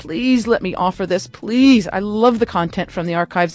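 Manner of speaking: plain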